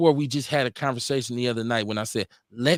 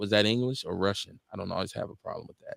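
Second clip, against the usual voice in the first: ordinary talk, nothing marked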